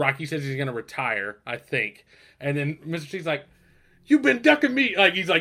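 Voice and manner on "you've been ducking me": put-on, very high, loud, shrill, challenging yell. Retelling a movie scene where he yells from the crowd: imitating Mister T yelling. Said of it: "he just starts yelling at Rocky".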